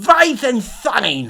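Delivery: put-on German-sounding accent. Reading a story aloud, voicing a character calling out a name: German-sounding accent. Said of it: "That one sounded German".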